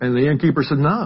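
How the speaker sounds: ordinary talk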